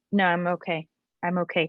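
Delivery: ordinary delivery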